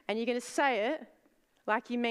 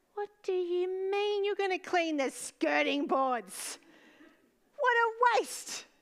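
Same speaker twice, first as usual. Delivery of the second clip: small, tiny, pitched-up little creature voice; 9 semitones higher than usual. Imagining her creative self as a little being talking back, little being voice. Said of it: "she's like this little being".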